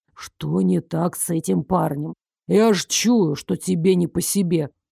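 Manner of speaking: hissed in a low voice. A man hisses to the narrator at the far end of the counter: hissed in a low voice. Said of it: "понизив голос, прошипел Даррыш".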